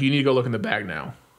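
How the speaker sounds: usual speaking voice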